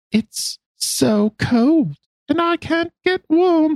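put-on eerie, creepy child voice, very high and slow. Narrating a story, voicing a voice a girl hears alone, creepiest child voice. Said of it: "That's my creepiest child voice that I have".

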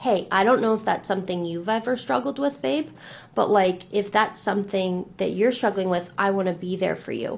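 ordinary delivery

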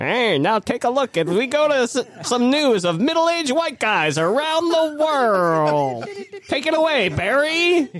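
put-on very high, slow old-timey 1920s announcer voice. Speaker acts out a planned theme intro for a news segment: old-timey 1920s voice. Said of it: "in that old-timey 20s voice".

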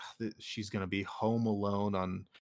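ordinary talk

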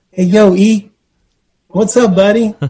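timid little voice. Speaker retells someone greeting him before he knew who it was: imitating a meek, mild voice. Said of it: "So a little meek, mild voice on that".

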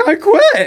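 very high, loud, voice cracking mid-word. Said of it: "my voice broke".

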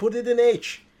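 put-on heavy, high-pitched Slovak-style Eastern European accent. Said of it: "I am impressed with your accent".

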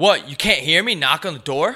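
mock irritated attitude. Retelling a man who came in during a phone call, imitating his attitude. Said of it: "with an attitude".

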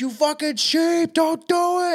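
high scream at the top of the lungs. Speaker recalls screaming at people while driving past a clinic; retelling own screaming. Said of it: "scream at the top of my lungs".

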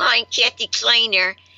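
words pushed through clenched teeth and a shut jaw. Speaker shows how she phoned with her jaw wired shut; talking through clenched teeth. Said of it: "so I could talk like this. If you clench your teeth".

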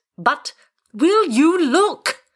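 shrill, very high-pitched, drawn-out yell. On a plane, a passenger argues with the pilot, shouting. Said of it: "shouted Wilson".

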